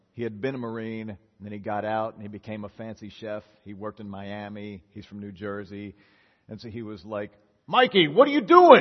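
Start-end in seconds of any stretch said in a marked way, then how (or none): 7.7-8.8 very loud, high-pitched, shrill, furious yelling. Retelling how the chef caught him at work: imitating an angry yelling chef. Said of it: "He's all mad and yelling at me".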